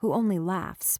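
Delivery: plain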